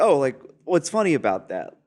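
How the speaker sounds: offended, affronted, indignant tone. Retelling how a man reacted to a comment about his wife, acting all offended. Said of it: "he was like acting all offended".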